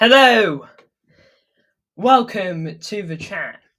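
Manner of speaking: winded, very slow speech. Greeting the chat after running around the house: out of breath. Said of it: "I'm slightly out of breath".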